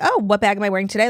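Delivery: normal talking voice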